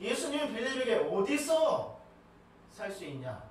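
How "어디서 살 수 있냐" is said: emphasis lands on the word 어디서. Retelling the question Jesus asked Philip: stress on 어디서. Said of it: "제가 강조점을 어디라고 이야기를 하고 있습니다".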